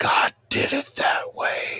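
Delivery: hushed, barely voiced whisper. Stating what many creationists think: whispered line. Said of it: "I'm going to whisper it".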